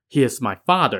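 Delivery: ordinary delivery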